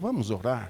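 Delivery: smooth, mild, soft, gentle voice. Retelling the pastor inviting a quarreling couple to pray: imitating Pastor Figueiredo's soft voice. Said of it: "com aquela voz suave dele falou".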